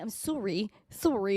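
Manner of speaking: put-on, Canadian-sounding accent. Joking that an apology sounded canadian: put-on canadian accent. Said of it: "that sounded very Canadian".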